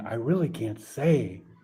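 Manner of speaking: whispered speech. Redoing a character's line from their own book after correcting himself: whispering. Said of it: "he was whispering".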